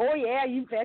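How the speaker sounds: put-on Wisconsin accent, broad Midwestern vowels. Joking about how people talk in Wisconsin: put-on Wisconsin accent. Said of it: "It's Wisconsin".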